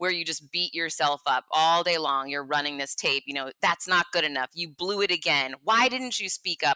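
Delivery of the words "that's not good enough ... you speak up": imitated harsh, critical voice. Describing negative self-talk, imitating a harsh inner voice. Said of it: "really harsh, a harsh voice".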